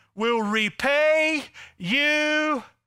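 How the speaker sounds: put-on pleading. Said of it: "He begins to beg, plead".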